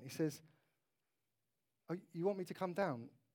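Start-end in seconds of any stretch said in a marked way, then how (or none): 1.9-3.0 mock arrogant tone, quieter. Retelling Nehemiah's answer to a call to come down: imitating an arrogant reply. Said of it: "Almost sounds a little bit arrogant".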